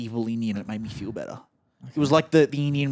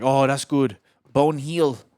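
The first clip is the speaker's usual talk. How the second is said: loud put-on Indian accent; 5 dB louder than usual. Speaker quoting a man who asked about his shoulder, put-on Indian accent. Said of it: "this an Indian accent you're trying to".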